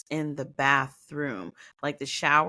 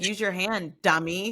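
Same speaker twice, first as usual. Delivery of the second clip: ordinary delivery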